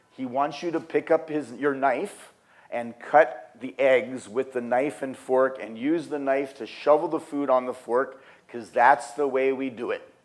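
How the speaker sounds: ordinary talk, nothing marked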